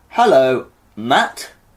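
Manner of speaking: put-on English accent. Opening a staged conversation between two podcast hosts, in an English accent. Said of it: "We're doing an English accent this time round".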